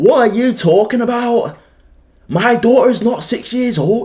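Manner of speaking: mock, very high, loud, mounting shrill outburst. Retelling an argument with a woman who got louder: imitating her getting louder. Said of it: "getting louder".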